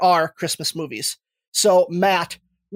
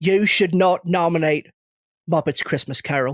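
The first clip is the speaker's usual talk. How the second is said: put-on British actor voice. Doing an impression when asked for the best one: Michael Caine impression. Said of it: "best Michael Caine impression saying".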